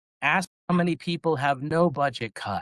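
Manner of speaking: mock shout, high and drawn out. Retelling calling out from the back of the room: retelling own yell. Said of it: "I just yelled out".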